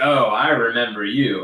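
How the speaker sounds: put-on foreboding, slow, ominous delivery. Replaying own greeting to a viewer: mock-ominous tone. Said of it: "that sounded kind of ominous".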